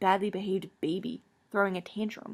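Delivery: ordinary delivery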